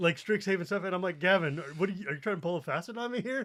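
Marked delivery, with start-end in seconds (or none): none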